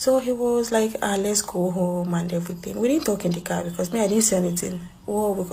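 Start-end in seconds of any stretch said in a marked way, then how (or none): none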